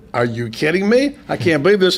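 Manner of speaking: ordinary talk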